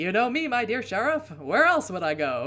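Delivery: put-on loud, vintage old-time radio-drama voice. Voicing a game character's line to the sheriff, in an old-time radio voice. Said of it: "Do I sound like I'm on old-time radio?".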